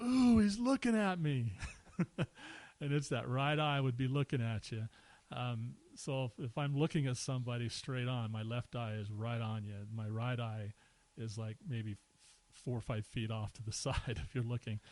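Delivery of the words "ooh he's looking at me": put-on high, loud girlish blurting. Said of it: "blurts out".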